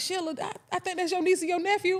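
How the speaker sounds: acted, very high, calling-out holler. Retelling how a man spotted kids cutting school: imitating a man yelling out. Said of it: "he yelled out".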